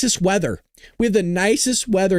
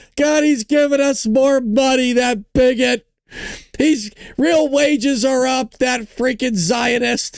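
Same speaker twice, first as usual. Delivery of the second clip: high-pitched, put-on, sarcastic griping tone; 7 semitones higher than usual. Mocking people who pretend everything's terrible: mocking imitation of complainers. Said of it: "psychos just pretend like everything's terrible".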